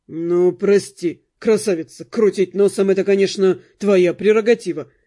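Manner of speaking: snorting without malice. The count answers a woman complaining about him, with a good-natured snort. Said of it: "беззлобно фыркнул в ответ граф".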